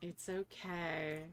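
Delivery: very bored, flat tone. Voicing someone holding back another's hair: very bored sounding. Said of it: "someone else just very bored sounding".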